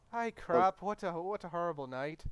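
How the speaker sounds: put-on Irish accent. Voicing a character after a night out: Irish accent. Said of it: "That's a good Irish accent".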